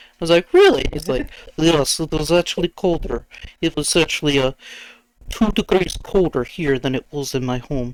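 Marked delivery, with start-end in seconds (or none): 1.6-8.0 deliberately awful put-on Russian accent. Retelling a man's answer about the freeze storm, in a terrible Russian accent. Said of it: "I did like a terrible Russian accent".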